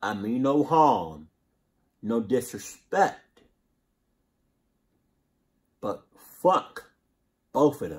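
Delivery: angry, pissed-off delivery. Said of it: "this is how you know I'm pissed off".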